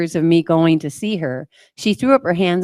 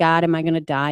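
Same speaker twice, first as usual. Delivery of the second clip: put-on crying, tearful voice. Retelling a moment while praying the rosary, reenacting crying. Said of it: "and I'm crying".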